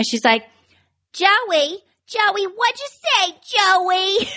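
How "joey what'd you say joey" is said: mocking cringy impression, much higher pitch. Retelling how a woman spoke to her brother, in a cringy imitated voice. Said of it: "her voice was just so cringy".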